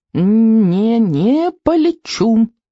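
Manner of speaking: high, squeaky tiny dragon voice, first word stretched. Narrator reads a small dragon's line, in a squeaky dragon voice. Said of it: "пищал дракон".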